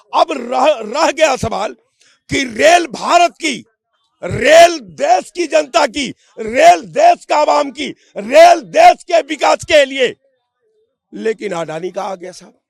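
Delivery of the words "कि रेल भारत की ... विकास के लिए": slow, rising angry shout. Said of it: "काहे आप इतना गुस्सा जा रहे हैं?".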